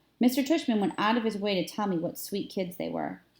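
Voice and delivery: ordinary talk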